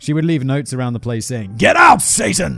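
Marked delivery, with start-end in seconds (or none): 1.5-2.6 put-on very loud, rough preacher voice slipping into British accent. Reading out the notes she left around her home: rough preacher voice slipping British. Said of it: "that slipped into British too much".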